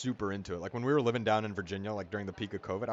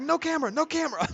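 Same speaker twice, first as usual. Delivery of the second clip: shrill, loud yelling; 6 dB louder than usual. Retelling a man from the store yelling about a camera: imitating a shopkeeper yelling. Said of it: "starts yelling at my dad".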